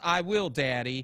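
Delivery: put-on snarky, dismissive, sarcastic brush-off. Retelling a guy's answer to a warning to be careful: mock-sarcastic retort. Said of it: "he sarcastically says".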